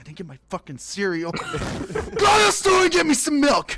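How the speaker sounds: mock angry outburst. Retelling being upset as a kid when the morning routine broke: imitating own angry past self. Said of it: "I would be so angry".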